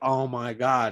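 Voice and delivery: mock frantic, shocked, panicked freak-out. Describing Amanda Nunes's coach in the stands after a loss: mock freaking out. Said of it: "She was like freaking out".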